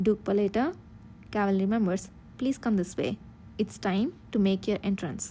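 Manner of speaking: ordinary delivery, nothing marked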